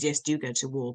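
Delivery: ordinary talk, nothing marked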